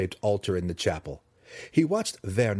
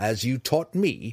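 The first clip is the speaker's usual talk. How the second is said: sharp, snapped delivery; 3 semitones higher than usual. Zack retorts to Malice, snapping back at her. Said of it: "snapped Zack".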